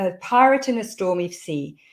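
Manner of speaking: plain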